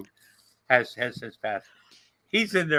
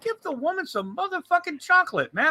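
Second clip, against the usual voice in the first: mock pissed-off angry rant, pitched very high. Retelling talking to a wife while pissed off at the rehab place: retelling own angry outburst. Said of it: "I was pissed off".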